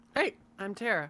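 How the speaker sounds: voice cracking unexpectedly partway through. A player introduces themselves at the start of a game podcast, voice cracking. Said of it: "My voice just cracked for some reason".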